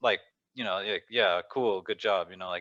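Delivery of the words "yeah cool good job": slow, mocking, insincere, sarcastic tone. Retelling how she said it on the show: imitating sarcastic praise. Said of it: "but sarcastically".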